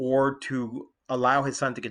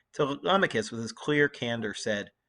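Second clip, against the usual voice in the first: ordinary delivery, nothing marked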